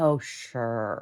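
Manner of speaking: mimicked condescending, accusing put-on voice. Retelling how an accuser dismissed the denial: imitating Laura's condescending tone. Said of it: "really condescending".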